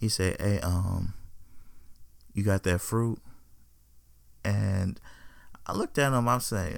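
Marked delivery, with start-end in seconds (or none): 0.4-3.2 put-on whispering voice. Retelling a young man's question in a hardware store: imitating someone whispering. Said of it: "he was a little whispering about it".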